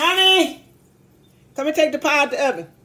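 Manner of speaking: loud, high-pitched yelling. Calling to her husband from the kitchen to take the pie out: yelling. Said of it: "excuse me for yelling and screaming".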